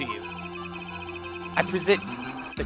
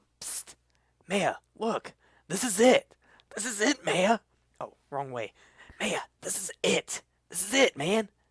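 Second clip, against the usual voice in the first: hushed, whispered voice; 5 semitones higher than usual. Showing maya a piece of evidence in court: whispering. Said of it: "And why are you whispering?".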